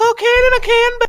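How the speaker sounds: shrill, very high-pitched, loud voice. Retelling a comedy sketch about a cola drink: Dave Chappelle high-pitched voice. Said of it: "he just went with a really high-pitched voice".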